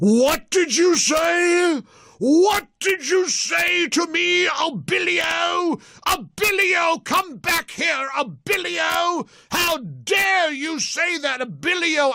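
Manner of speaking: put-on very high, very slow indignant British accent, say dragged out. Retelling how Gorka yelled after a man named Abilio, Gorka impression with British accent. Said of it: "big booming voice with the British accent".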